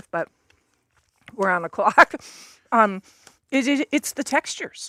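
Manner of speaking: speaking while chewing. Tasting food with someone while on the clock, talking with food in mouth. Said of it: "pardon me for talking with food in my mouth".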